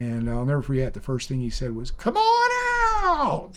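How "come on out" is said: put-on very high-pitched strong Southern accent. Speaker quotes a man from Georgia first greeting him, strong Southern accent. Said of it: "he had this real strong Southern accent".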